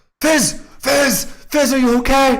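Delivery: frantic, panicked, very high calling out. Voicing a character calling to a frozen friend: panicked calling out. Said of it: "he's just, like, like, panicking".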